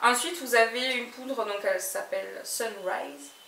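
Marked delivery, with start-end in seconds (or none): 2.4-3.3 put-on English accent, much quieter. Presenting makeup products, naming a powder with an English accent. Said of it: "vous remarquerez mon accent anglais parfait".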